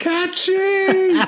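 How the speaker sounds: high-pitched panicked yell with laughter.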